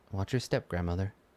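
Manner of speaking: very quiet, hushed, barely audible low murmur. A figure in plate armor catches a grandmother before she falls, quietest voice. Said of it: "just like the quietest voice says".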